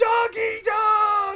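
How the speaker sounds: shouting. Pitching a movie to a studio executive: yelling. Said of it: "Why are you yelling at us?".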